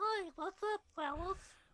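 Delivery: put-on high-pitched childlike voice with lisp. Discussing a de-aged voice, a speaker imitates it: young Luke voice, prepubescent lisp. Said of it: "prepubescent lisp".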